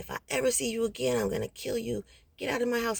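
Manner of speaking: put-on, furious, threatening, mildly yelled. Speaker recounts an attacker threatening to kill them, retelling his furious yelling. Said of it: "yelling at me".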